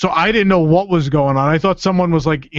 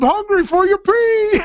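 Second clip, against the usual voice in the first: very high put-on talking-toilet voice. Retelling a prank on a friend in a bathroom stall: put-on talking toilet voice. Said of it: "I start talking like I'm the toilet".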